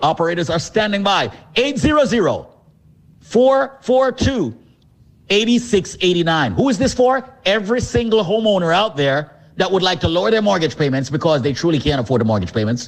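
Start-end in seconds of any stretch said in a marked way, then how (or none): 1.5-6.5 very slow, deliberate, spaced-out delivery. Advertising a mortgage program, repeating the phone number slowly. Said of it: "Let me say the number slowly".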